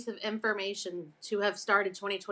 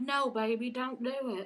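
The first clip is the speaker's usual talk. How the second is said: mock pleading, higher; 3 semitones higher, 3 dB quieter than usual. Imitating Ryan begging her not to quit social media: imitating Ryan pleading. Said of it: "He's like".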